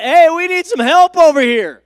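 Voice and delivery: high, loud yell, carrying far.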